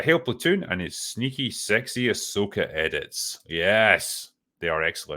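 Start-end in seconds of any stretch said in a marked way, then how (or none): none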